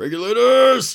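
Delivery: high, loud, drawn-out epic movie battle cry.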